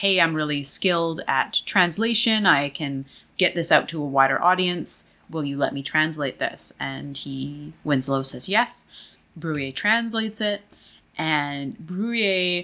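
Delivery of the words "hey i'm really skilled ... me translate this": ordinary talk, nothing marked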